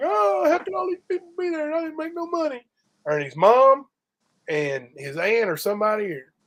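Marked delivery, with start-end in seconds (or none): 0.0-2.6 very high, tearful crying wail. Retelling how a promoter complained after a show: imitating someone crying. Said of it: "Ernie went out there crying, like".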